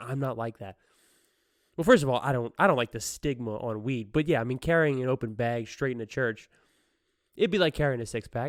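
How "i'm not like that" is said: hysterical, frantic, insistent protesting woman's voice. Retelling how the accused woman protested: imitating a hysterical woman. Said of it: "This woman's fucking hysterical".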